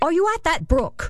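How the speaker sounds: stern, severe, very high-pitched tone. A narrator reads a woman questioning a child hidden in the bushes, sternly. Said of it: "she asked sternly".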